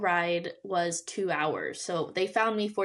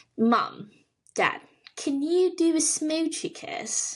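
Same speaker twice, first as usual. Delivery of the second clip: very high, slow, put-on Australian accent; 9 semitones higher, 4 dB louder than usual. Asked for an Australian accent, the speaker quotes a cartoon line: Bluey line in Australian accent. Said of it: "do your best Australian accent".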